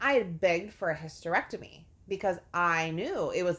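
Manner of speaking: ordinary talk, nothing marked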